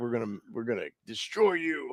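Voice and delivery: acted, evil-sounding, sinister, menacing tone. Retelling how the other speaker's promise sounded, imitating an evil tone. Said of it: "that sounds evil".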